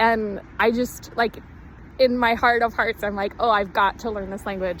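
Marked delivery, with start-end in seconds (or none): none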